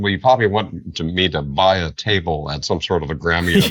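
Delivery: ordinary talk, nothing marked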